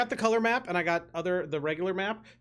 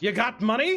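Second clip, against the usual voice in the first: put-on woman's voice, higher pitch; 5 semitones higher, 4 dB louder than usual. Voicing the woman at the dice game answering a player: voicing the woman dice player. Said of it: "and she looks over at you and says".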